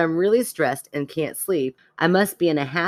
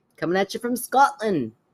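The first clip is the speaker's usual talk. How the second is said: put-on Scottish accent, pitched up; 5 semitones higher than usual. Asked to repeat an email subject line in an accent, a scottish accent attempt. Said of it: "Now do it in an accent".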